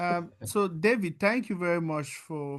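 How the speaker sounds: still shouting.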